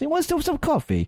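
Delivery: bad put-on Italian accent. Retelling what the brother-in-law's italian mother asked: bad italian accent imitation. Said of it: "bad, bad, bad Italian, um, im-, imitation".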